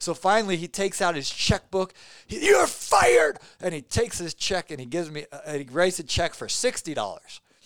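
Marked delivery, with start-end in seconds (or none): 2.5-3.4 put-on fuming outburst, higher pitch and louder. Retelling a customer firing him while writing a check: imitating someone fuming. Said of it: "he's fuming".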